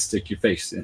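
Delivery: ordinary delivery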